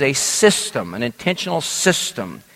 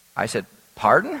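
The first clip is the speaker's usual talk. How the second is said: ordinary talk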